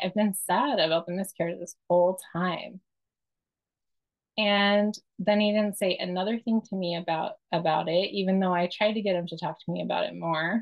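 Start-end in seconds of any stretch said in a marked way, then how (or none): none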